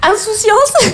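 tearful, breath-catching, envious voice.

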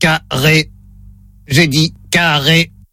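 low, flat, monotone robotic machine voice. A caller running a word test speaks as the robot, in robot voice. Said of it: "Voix de robot enclenchée".

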